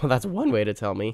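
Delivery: cracked voice, breaking mid-line. Playing a game online, reacting to a message, voice cracks. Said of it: "Voice crack".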